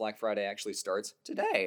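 voice cracking and breaking. A co-host announcing a sale that starts today, with the voice cracking. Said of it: "That was a voice crack and a half".

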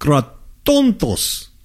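krotontos in put-on, sing-song, swooping Greek accent. Pronouncing the Greek term with an accent, put-on accent on krotontos. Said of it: "and I'm going to say it with an accent".

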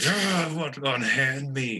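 very slow, high, drawn-out, stretched-out scream. Narrating a game, voicing a shackled captive who wakes after a slap: Vosh screaming. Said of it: "He screams at you".

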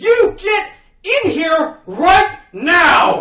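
long, loud, high-pitched scream. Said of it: "just screamed".

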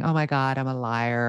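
play-acted sobbing, tearful crying through the words. Retelling coming downstairs one day to confess a lie, imitating own past self crying. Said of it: "i came downstairs one day crying saying".

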